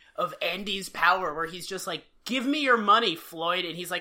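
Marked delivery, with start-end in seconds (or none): 2.3-3.7 mock sinister, menacing tone. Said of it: "a sinister moment of".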